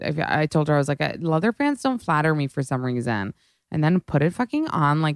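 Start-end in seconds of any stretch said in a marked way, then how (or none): none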